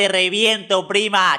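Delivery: high-pitched, mock street-tough tough-guy voice.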